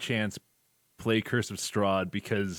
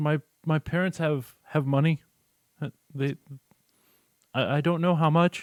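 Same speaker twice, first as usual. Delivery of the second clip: put-on crying, tearful young child voice, much higher; 6 semitones higher, 5 dB louder than usual. A child asking armed adventurers for help with a monster, crying young child. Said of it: "young children are crying".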